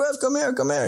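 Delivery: put-on very high, eager, thrilled, excited calling. Retelling how Samurai showed Griff his dug positions: imitating Samurai excited. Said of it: "He's all excited".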